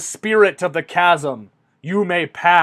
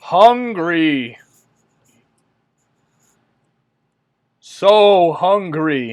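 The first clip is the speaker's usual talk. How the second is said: echoing, reverberating voice, louder; 4 dB louder than usual. Voicing the guardian as the players ask to cross to the door, in an echoing voice. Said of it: "you hear a voice echo through the chasm".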